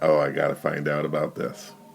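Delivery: normal talking voice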